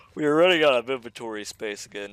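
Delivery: mid-yawn. Narrating a game playthrough to viewers, yawning. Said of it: "I'm sorry for yawning so much".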